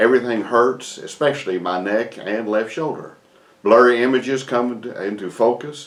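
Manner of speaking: plain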